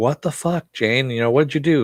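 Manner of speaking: mock furious, angry yelling. Recounting a story, the speaker quotes a furious character yelling at another, retelling an angry yell. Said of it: "he's yelling".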